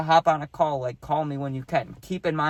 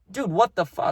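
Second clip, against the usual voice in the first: heated, mad, angry, high-pitched outburst; 5 semitones higher than usual. Retelling own reply to a friend's accusation: imitating own angry past words. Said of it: "that made me mad".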